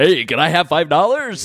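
put-on big booming male voice. Retelling a homeless man asking for five dollars: imitating a big-voiced man. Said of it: "really big voice guy".

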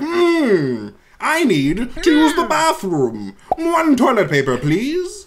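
fancy, high-pitched voice. Speaker showing how they occasionally slip into a fancy voice. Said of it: "go into like a fancy voice".

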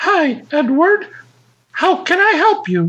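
very high automated phone-system voice. Retelling a call to the phone company: automated female voice. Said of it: "this automated female voice".

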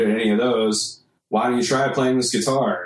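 ordinary talk, nothing marked

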